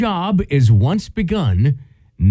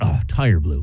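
mock sarcastic mutter under breath, lower; 11 semitones lower than usual. Retelling a father's reaction to a blown tire: imitating dad muttering sarcastically under breath. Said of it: "he would just repeat under his breath".

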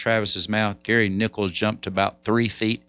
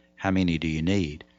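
hushed, quiet voice; 4 semitones lower than usual. Retelling a guitar seller's reply, in a quiet voice. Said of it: "in a quiet voice".

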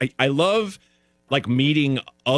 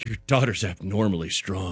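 mumbled aside, muttered under the breath; 2 semitones lower, 4 dB quieter than usual. Retelling what a woman said about the speaker's daughter: imitating a mutter under breath. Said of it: "Under her breath".

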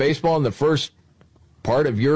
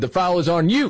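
ordinary talk

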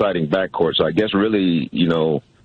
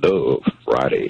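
low, deep baritone voice; 5 semitones lower than usual. Asked by the host to deliver a phrase on the spot; deep baritone voice. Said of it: "in that deep baritone voice of yours".

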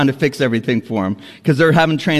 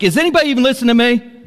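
loud, raised, pitched-up frustrated outburst, acted; 10 semitones higher than usual. Recounting a report while others were talking and laughing, re-enacting raising the voice real loud. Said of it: "I raise my voice real loud".

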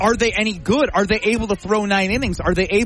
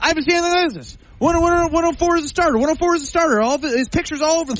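put-on excited voice, pitched much higher; 8 semitones higher than usual. Speaker acts out Homer talking about a pitcher, imitating Homer talking excitedly. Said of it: "Is that your Homer impression?".

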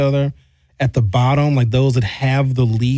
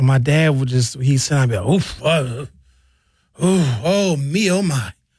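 imitated old man groaning sounds. Retelling how his dad sat down: imitating his dad's old man sounds. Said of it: "I make old man sounds now".

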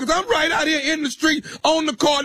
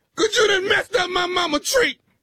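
fake crying, yelling through the tears. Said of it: "You sound like a girl".

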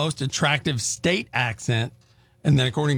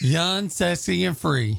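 clumsy put-on country accent, pitched up; 5 semitones higher than usual. Co-hosts trying country accents for fun, one attempts a line: bad country accent. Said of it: "I was trying to do country".

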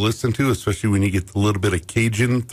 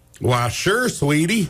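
fake Southern accent, pitched high; 5 semitones higher than usual. Asked to do a fake southern accent, the speaker answers: fake southern accent. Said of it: "Can you do a fake Southern accent?".

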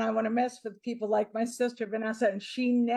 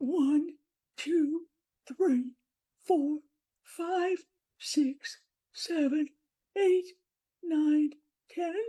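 distorted disguised voice, much higher; 5 semitones higher than usual. Asked to count to ten by someone guessing who she is, in a distorted disguised voice. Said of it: "the greatest voice distortion I've ever heard".

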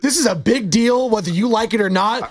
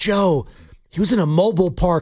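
put-on speaking cadence, lower; 4 semitones lower than usual. Retelling what he said about the arrest: imitating his speaking cadence. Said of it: "The cadence in his voice, he's like".

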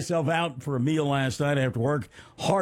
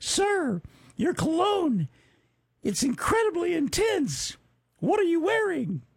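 put-on very high-pitched, girly young-woman voice; 14 semitones higher than usual. Quoting a woman who came up to him, imitating how girls talk. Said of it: "she said it like this because this is how girls talk".

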